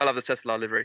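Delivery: said really quickly, rapid-fire. Podcast host slips in a phrase for the og listeners, saying it really quickly. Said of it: "we're going to have to say it really quickly".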